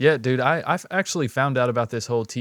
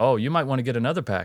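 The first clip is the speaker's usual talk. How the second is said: put-on Northeastern US accent. Retelling what a lady from the Northeast said: imitating a Northeast accent. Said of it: "she definitely had that accent".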